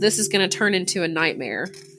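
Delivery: ordinary delivery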